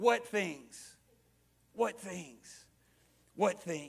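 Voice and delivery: soft, wry, teasing, acted sarcastic tone. Retelling a quoted reply, retelling a sarcastic question. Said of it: "a little sarcastic way".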